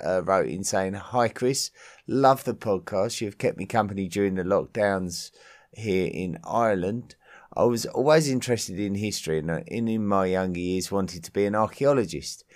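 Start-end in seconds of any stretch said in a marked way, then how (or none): none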